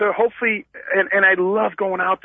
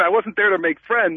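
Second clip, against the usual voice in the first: usual speaking voice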